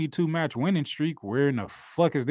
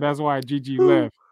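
usual speaking voice

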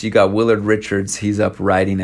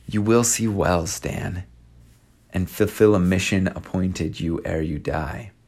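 whispered voice; 5 dB quieter than usual. Retelling a quiet prophecy given at night: whispering. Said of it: "and then he whispers".

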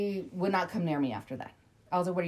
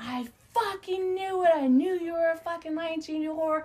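mock piercing, very high, shrill screaming; 10 semitones higher than usual. Chasing a guy who ran away, speaker retells what they screamed: retelling own screaming. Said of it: "I'm fucking screaming down all the way".

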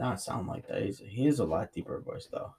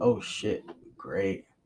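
sarcastic voice; 2 semitones lower than usual. Retelling own earlier reply in a conversation: retelling a sarcastic remark. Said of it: "I said, like, sarcastic".

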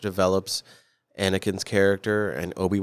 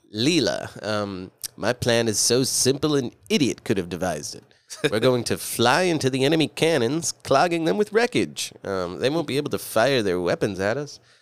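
stock cartoon space-captain voice; 3 semitones higher than usual. Speaker quotes the cartoon character to a co-host who doesn't know him: Zapp Brannigan voice. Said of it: "he's got a very stereotypical voice".

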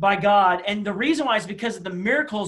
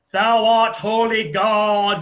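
put-on very slow, loud, formal old-English thee-and-thou intoning; 5 dB louder than usual. Imitating people praying in church: imitating King James-style prayer. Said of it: "they get King James Version on you".

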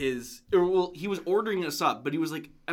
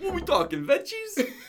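very high put-on light Italian lilt; 13 semitones higher than usual. Retelling how Rick asked the sandwich maker about toppings, imitating Rick's Italian accent. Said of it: "he says it in that like accent".

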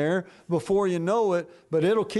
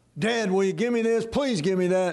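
put-on childish pleading. Retelling how they bugged their father as a kid: imitating own childhood begging. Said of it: "I was able to obtain a lot of things by bugging my father".

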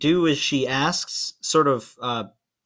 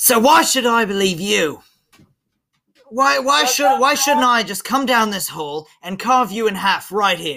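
loud, high, barked-out delivery; 8 semitones higher, 5 dB louder than usual. Voicing a character lowering his sword at the party: barking out. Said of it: "he just sorta, like, barks out at you".

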